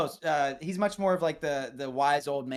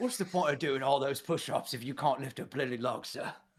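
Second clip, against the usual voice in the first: put-on Cockney butler voice, quieter; 4 dB quieter than usual. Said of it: "Michael Caine's, it's the same voice".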